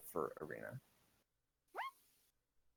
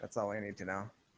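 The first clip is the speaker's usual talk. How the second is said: ordinary delivery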